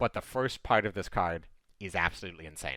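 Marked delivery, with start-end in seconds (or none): none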